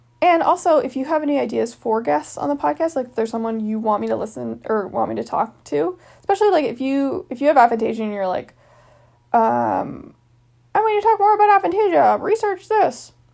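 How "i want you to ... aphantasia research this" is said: put-on fan voice, very high-pitched. A podcast host asks for guest ideas, voicing a listener in a high-pitched podcast fan voice. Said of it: "That's my podcast fan voice. Clearly, you're very high-pitched".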